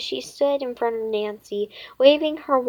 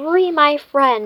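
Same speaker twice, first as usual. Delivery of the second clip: hissing, louder and higher; 4 semitones higher, 6 dB louder than usual. A girl playing a witch speaks to another girl, hissing. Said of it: "she hissed".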